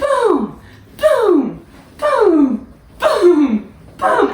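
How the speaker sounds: high-pitched voice. Alternating low and high sets of booms, now the high ones in a high-pitched voice. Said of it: "I like to say boom in a high-pitched voice".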